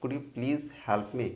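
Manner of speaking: slight extra stress on the word please. Teaching a polite English request that shouldn't sound like an order: stress on please. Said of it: "please में थोड़ा सा stress डालना".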